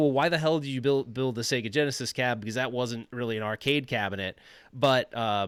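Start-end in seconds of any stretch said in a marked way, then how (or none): none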